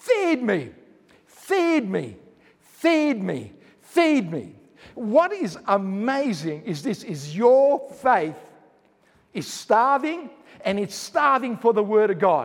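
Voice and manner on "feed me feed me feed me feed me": slow, desperate pleading cry. Giving a voice to your faith, which is starving: crying out. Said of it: "what your faith inside of you is crying out".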